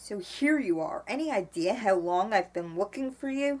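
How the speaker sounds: plain reading voice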